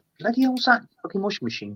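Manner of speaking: fast, high, startled outburst.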